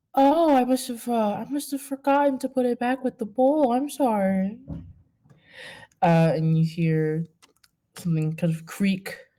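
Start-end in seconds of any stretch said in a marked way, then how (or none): 0.1-4.5 feigned gentle, polite tone. Voicing a conniving character who apologizes: fake soft tone. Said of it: "says in this fake sort of soft tone".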